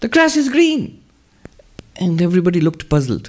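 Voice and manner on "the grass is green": piping, very high-pitched monk voice. Retelling a monk speaking to young monks, in a high-pitched monk voice. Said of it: "He with this high-pitched voice".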